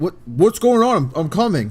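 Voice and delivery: very loud, high-pitched yell as if from a distance. Voicing Corman running back toward the group: yelling out. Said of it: "And he yells out to you guys".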